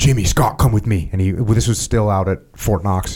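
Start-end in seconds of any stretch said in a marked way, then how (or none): 0.0-1.1 mock furious, angry tone. Retelling how an angry Stoner called two people aside: imitating Stoner angry. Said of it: "Stoner's all freaking mad".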